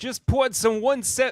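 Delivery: loud, very high-pitched put-on Brooklyn accent. Asked to read a promo line aloud, trying it in a brooklyn accent. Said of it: "read it in a Brooklyn accent".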